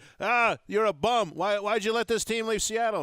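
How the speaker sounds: very loud, very high heckling shout. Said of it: "you said it very loudly".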